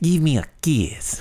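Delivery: slow, high-pitched, sexy delivery. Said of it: "starting to sound like Doug Mercaida".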